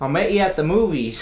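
put-on Ohio accent, high-pitched and loud. Playing a caller from an Ohio number, the speaker uses a put-on Ohio accent. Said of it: "What accent was that? Your Ohio accent?".

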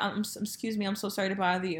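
jittery, halting, nervous stammering delivery. Retelling a man approaching her to talk: imitating a nervous man. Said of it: "he looked so nervous when".

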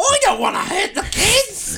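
put-on very high, slow, royal posh English accent. Retelling what Princess Diana said: Princess Diana impression. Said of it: "She talks like the queen".

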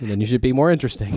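dry, flat, expressionless deadpan. Retelling her comeback after he complained about her phone, imitating her deadpan. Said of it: "And she deadpans".

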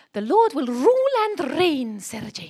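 put-on very loud, swooping, light Welsh accent. Speaker quotes a Welsh woman preacher who used to speak to her, in a slight Welsh accent. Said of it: "I now need to do a slight accent for you".

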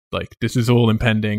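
ordinary delivery

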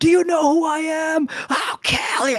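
very high shriek with voice cracking and breaking. Retelling a guy screaming threats at the speaker, retelling a voice-cracking scream. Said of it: "His voice is cracking".

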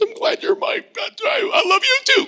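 very high-pitched, crackling voice. Retelling what the father said back, in a crackly voice. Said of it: "this crackly voice".

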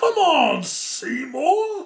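very high-pitched voice as a hungry, man-eating plant. Joking that the creature looks like Audrey II: Audrey II voice. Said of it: "it looked a little bit like Audrey two".

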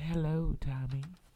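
sugary, flirtatious tone. Reading a story aloud, Terry greeting Tommy: sweet flirty voice. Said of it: "Terry called in her sweet voice".

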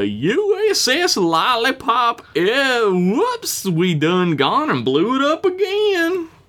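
absurd put-on Southern accent, high and swooping. Signing off a comedic in-character letter; ludicrous Southern accent. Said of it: "ludicrous Southern accent is what it was said".

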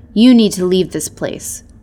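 said with a growl. Narrating the Alpha telling a stranger to leave, growling. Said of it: "the Alpha growled at the stranger".

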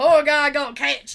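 very loud, put-on Southern US accent. Speaker switches to reading a line aloud: put-on Southern accent. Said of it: "I'm going to read it in a southern accent now".

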